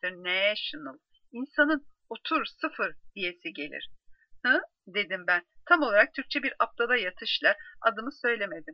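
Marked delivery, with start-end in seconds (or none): 0.0-1.0 put-on savoring, drawn-out delivery in an American accent. Mimicking a CNN presenter saying International, Alison Abu Shaar's drawn-out International. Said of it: "bir yedire yedire söyleyişi".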